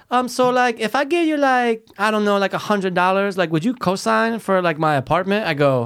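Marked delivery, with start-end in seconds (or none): 0.8-5.4 put-on Spanish accent on English. Retelling a coworker asking to be a co-signer: Spanish accent. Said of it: "if I do the accent, she's Spanish".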